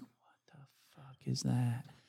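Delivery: hushed whisper. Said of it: "I'm like".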